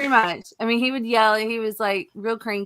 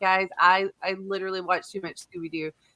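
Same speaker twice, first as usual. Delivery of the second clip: normal talking voice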